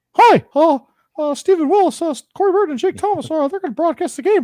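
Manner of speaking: put-on cartoon mouse voice. Joking about sending a clip to Mickey Mouse: Mickey Mouse voice. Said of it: "That's actually not a bad impression".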